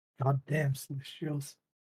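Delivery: soft, under-the-breath grumbling mutter. Playing a character annoyed at a voice in their head: muttering under breath. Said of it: "mutter under my breath".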